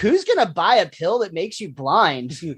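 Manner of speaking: usual speaking voice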